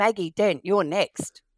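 put-on stern, commanding, big calling-out voice. Retelling someone playing doctor calling out the next patient, mock-stern big voice. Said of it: "in a big stern voice called out".

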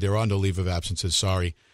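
ordinary talk

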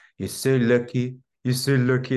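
put-on French accent. Retelling what the surgeon said each morning at the bed: imitating a French accent. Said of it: "This French accent".

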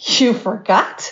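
incredulous, disbelieving tone. Retelling own reply to the teacher, retelling a disbelieving question. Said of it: "a tone of disbelief".

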